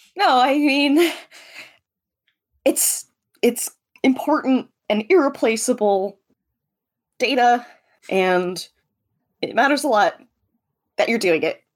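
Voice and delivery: slow, deeply sincere, very earnest tone. Reassuring another character that his task matters: very earnest. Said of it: "Tries to say this very earnestly to him".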